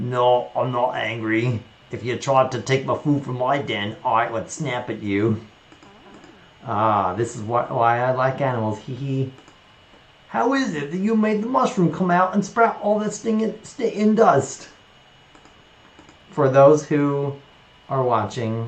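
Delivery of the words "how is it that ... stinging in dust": cartoonish British character accent, pitched up. Imitating a tv show character for viewers, in a cartoonish british character voice. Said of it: "cartoonish British voice character, so I'm trying to do".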